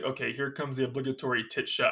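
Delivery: normal talking voice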